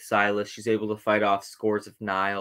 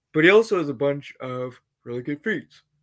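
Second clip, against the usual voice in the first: speaking through a yawn, much higher; 5 semitones higher, 4 dB louder than usual. Describing a Jedi's feats in a video, yawning while talking. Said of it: "I'm yawning in the middle of the video".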